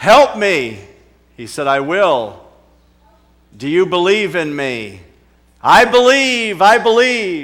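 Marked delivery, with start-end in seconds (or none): 1.7-5.0 booming voice from above. Telling a joke about a man calling for help, the answer in booming voice. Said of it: "A booming voice came back".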